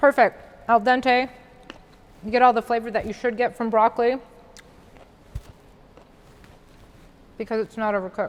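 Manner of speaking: talking with mouth full of food. Speaker tasting food on camera while others laugh, talking with a full mouth. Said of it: "I have a full mouth".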